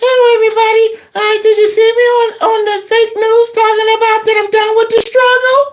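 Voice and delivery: very high voice with no bass. Mocking a man's big soft voice: mocking soft voice without bass. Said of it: "He does not have any bass in his voice".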